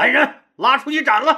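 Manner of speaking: loud, furious, commanding shout. Explaining palace guards, acting out an angry TV emperor, imitating an emperor shouting. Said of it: "大喊一声".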